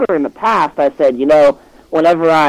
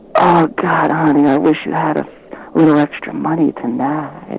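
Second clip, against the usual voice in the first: soft whisper, right up close. Retelling what a woman whispered into the speaker's ear, imitating her whisper. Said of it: "she whispers to me".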